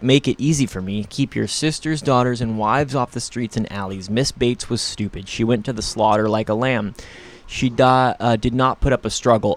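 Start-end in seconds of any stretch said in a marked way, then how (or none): none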